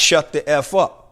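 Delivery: plain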